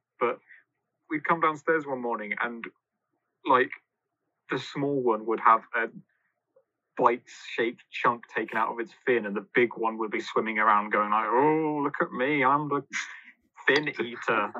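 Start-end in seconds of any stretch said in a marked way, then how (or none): 11.3-14.5 silly, very slow, drawn-out goldfish voice. Voicing the big pet goldfish after it bit the small one's fin, goldfish voice. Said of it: "That's my goldfish voice".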